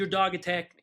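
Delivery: ordinary delivery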